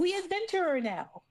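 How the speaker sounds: excited outburst. Narrator voicing a character who flies up to another, all excited. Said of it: "all excited".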